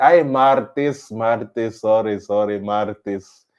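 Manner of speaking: slow, drawn-out put-on Filipino accent. Retelling their correction of a misheard name, in a filipino accent. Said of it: "you have to say it with a Filipino accent".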